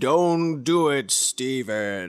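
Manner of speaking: play-acted deep, very slow, low, stretched-out delivery. Retelling a scene with a glowing apple and a snake: loud booming voice. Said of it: "a loud booming voice that was saying".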